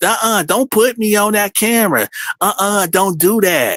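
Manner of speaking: mock, quarrelsome couple bickering. Retelling a man refusing to be filmed: imitating a lover's-quarrel tone. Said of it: "sounded like a lover's quarrel".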